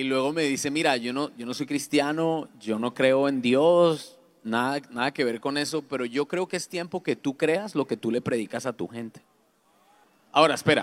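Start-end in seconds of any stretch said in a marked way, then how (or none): none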